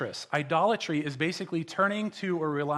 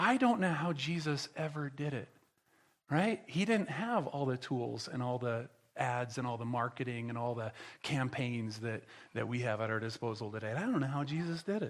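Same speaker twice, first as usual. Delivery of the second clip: sarcastic, ironic, feigned mock amazement; 5 semitones lower, 7 dB quieter than usual. Joking about modern church tools compared with jesus: sarcastic. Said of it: "That was sarcastic".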